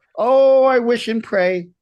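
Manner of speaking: very high, very slow, loud, drawn-out Italian mom voice. Recounting telling mom about booking a tv role; imitating mom's voice. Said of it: "I'm like, Mom".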